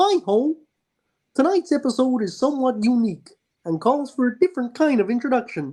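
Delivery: high-pitched puppet narrator style voice. Acting out the Muppets version of the Tower of Terror pre-show, do a Kermit impression. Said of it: "Why did you do an impression of".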